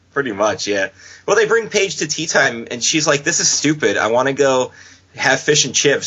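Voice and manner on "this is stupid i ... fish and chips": plain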